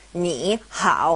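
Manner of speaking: ni and hao each with low dipping third tone. Showing how two third tones side by side sound: both syllables in third tone. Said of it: "both ni and hao are third tone characters".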